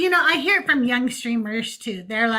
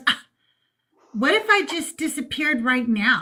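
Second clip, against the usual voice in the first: mock solemn, earnest, dead serious tone. Retelling a reply to a rapture joke: imitating Doug's serious tone. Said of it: "looked at me just this serious".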